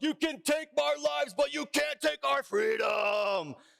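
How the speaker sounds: high, slow, shouted rallying battle-cry impression.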